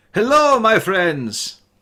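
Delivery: calling out. Narrating a scene where a figure waves from a wagon, calling out. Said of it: "calling out".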